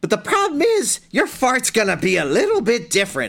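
clumsy put-on witch voice. Retelling what a witch said in a story, in a bad witch voice. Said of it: "My witch voice is really bad".

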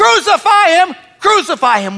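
loud, high crying out of a shouting crowd. Recounting the Jerusalem crowd turning at the end of the week: retelling a crowd yelling. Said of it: "they're yelling".

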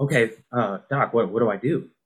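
ordinary delivery

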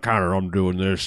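put-on poor American accent. Imitating an actor's first scene to another speaker: bad fake American accent. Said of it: "that's totally an American accent, bro".

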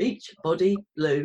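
very slow, very loud, booming, word by word. Speaker shows how carefully the brand name must be said: very slowly. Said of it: "you have to say it slowly".

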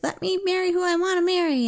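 put-on high, whiny girlish voice.

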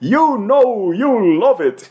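put-on high, drawn-out yell. Telling how a team member went through the hall shouting; shouting in a characteristic voice. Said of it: "saiu pelo salão gritando".

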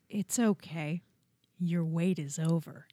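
put-on creepy deadpan, cold, low, slow, lifeless. Retelling a delivery man's line at the door: imitating a cold, dead, creepy delivery. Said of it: "the coldest, deadest, creepiest delivery".

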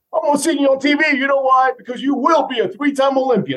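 mock very high, enthusiastic cheerleader shouting. Retelling a neighbor calling from his van window: imitating Tom yelling. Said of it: "He starts yelling".

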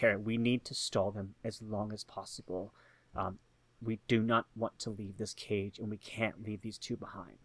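hushed, low, very quiet half-whisper. A player character leans forward to a companion's ear: half-whispering. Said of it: "and I whisper".

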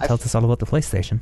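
soothing, droning put-on voice. Describing how Mark Cerny sounds reading tech specs: Mark Cerny soothing drone. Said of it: "almost a drone that he sort of falls into, just like this".

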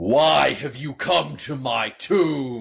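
booming voice, the word tomb drawn out. Narrating a game scene, voicing someone addressing visitors to its tomb, booming voice. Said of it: "an entirely different voice that booms".

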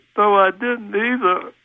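really sad, self-pitying, high little voice. Retelling what a voice said as the speaker walked away, in a mock-sad voice. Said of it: "this real sad voice said".

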